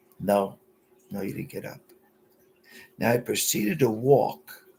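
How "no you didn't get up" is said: mock sweetest, kindest near-whisper. Retelling what a girl told the speaker: imitating a sweet, kind voice. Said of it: "in the sweetest, kindest voice".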